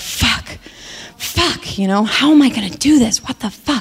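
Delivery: put-on muttering under the breath. Retelling pacing around a room before a call: imitating muttering under breath. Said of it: "saying under my breath".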